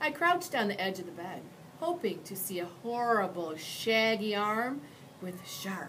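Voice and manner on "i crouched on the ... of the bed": ordinary delivery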